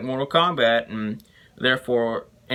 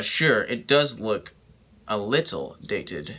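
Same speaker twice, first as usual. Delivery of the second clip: insincere, knowing, sarcastic agreement. Pretending to agree that the special effects only look a little dated: sarcastic. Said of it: "I was being sarcastic".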